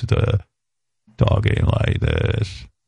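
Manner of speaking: creaky fry voice. Speaker demonstrates what vocal fry sounds like, vocal fry. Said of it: "It's this".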